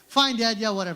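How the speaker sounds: usual speaking voice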